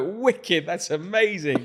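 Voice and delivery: high, loud thrilled cheering voice.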